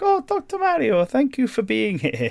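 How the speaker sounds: bad, very high, slow, swooping sing-song voice. Describing a game scene where Toad greets the doctor, terrible Toad voice. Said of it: "I guess it's a terrible Toad voice".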